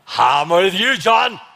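slow, booming pronouncement. The speaker asks God to boom once more, then voices the reply: booming voice of God. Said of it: "boom one more time for me".

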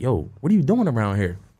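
ordinary delivery

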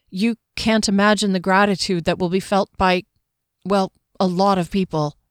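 plain

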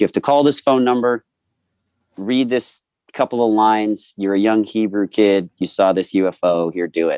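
plain

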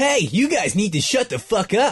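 put-on high cartoon-hero voice, pitch swinging around. Answering a call to try the voice: attempted Sonic voice.

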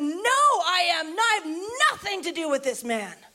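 acted, vehement, high, drawn-out cursing, "I" stretched out. Retelling a man cussing while denying he knows someone: acting out a swearing outburst. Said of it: "He starts cussing and swearing and says".

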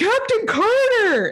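very high-pitched yell at full lung power. Retelling a scene where a man on a hill calls to the captain, retelling a loud shout. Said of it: "shouts out, ... as loud as he can".

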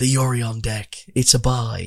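acted-out whisper. Retelling a player's answer while waiting for the semifinals: imitating a whisper. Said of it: "he just whispered to me".

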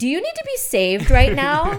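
booming, shrill, swooping, very loud full voice. Retelling walking up to someone at a dinner: retelling a full-voice remark. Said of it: "in full voice just said".

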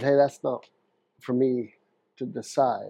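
ordinary talk

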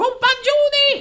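loud, high-pitched shouting. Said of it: "han fortsätter att skrika på ryssen".

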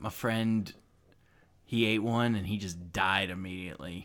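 very low, soft, easygoing, chill voice. Voicing a character in a role-play game, answering the other players' questions: chill voice. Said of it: "even though he's hearing the chill voice, / hey, have you do you know any places that like an old dragon might hide out at? There's, like, a lot of structures in this place, man. Oh, really? Where? Fu".

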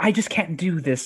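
ordinary talk

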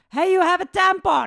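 blurted out suddenly and loud.

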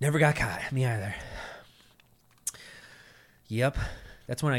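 breathless and winded, out of breath. Reminiscing with friends just after walking up stairs, out of breath. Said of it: "Why are you out of breath right now?".

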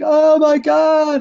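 acted-out high scream. Acting out her scene with the senator in the bar in Gotham, imitating someone screaming. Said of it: "where she started screaming like".

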